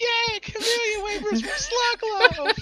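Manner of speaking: put-on slow, excited cheer from a chorus of children. Voicing a crowd of children cheering about free food: excited children's voices. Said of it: "you hear all the children".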